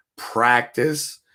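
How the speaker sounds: practice stressed with a rising tune. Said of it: "Emphasis on the word".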